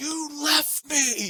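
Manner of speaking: mock shrill upset little-kid yelling, very high. Retelling how a little boy left behind yelled at them, imitating a child yelling. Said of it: "he's yelling".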